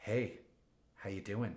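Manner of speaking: creepy movie-villain voice. Retelling a creepy video of Russell Wilson: imitating Russell Wilson as creepy movie villain. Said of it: "the bad guy in a movie looking at, like, a, a suspect they have hostage".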